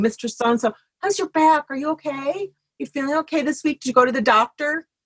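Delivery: bright, sunny, cheerful voice. Describing weekly phone check-ins, imitating a bright phone voice. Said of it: "just that little bright voice on the phone".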